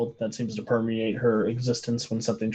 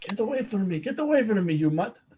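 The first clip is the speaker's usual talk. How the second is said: fake Russian accent, higher pitch; 10 semitones higher than usual. Voicing a character snarling at a dog: put-on Russian accent. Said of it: "I wish I had a German accent. All I have is Russian".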